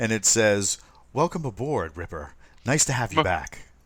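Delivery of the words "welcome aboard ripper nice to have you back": woman's computer assistant voice. Voicing the ship's AI as it greets Ripper aboard: female AI voice. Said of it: "female voice, uh, which is slightly better than Siri".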